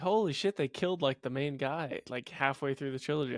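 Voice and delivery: plain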